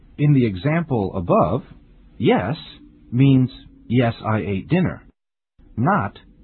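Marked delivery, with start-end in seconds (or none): none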